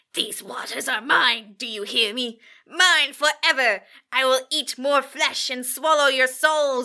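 throaty, guttural, possessed demon voice. Retelling a girl doing an exorcist-style bit; guttural voice. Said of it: "got the guttural voice".

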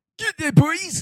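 put-on Scottish accent. On the show, repeating a line to the boys in a Scottish accent. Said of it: "He's Scottish".

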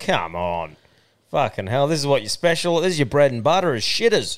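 ordinary talk, nothing marked

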